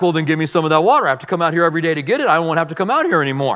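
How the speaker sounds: obnoxious, snarky, mocking tone, rattled off fast.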